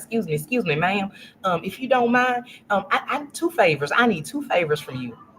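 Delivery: put-on strong, thick down-home country accent. Retelling a man in the car asking for favors, imitating strong country accent. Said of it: "he has the most country's accent".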